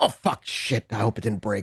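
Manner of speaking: quiet, muttered under the breath. Voicing Magpie overheard in a rundown quarry office, Magpie's quiet voice. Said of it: "the quiet voice of Magpie go".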